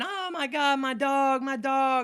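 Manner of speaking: very slow, drawn-out, high panicked scream. Retelling how a dog owner reacted to her hurt dog: imitating a woman screaming. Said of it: "she's screaming".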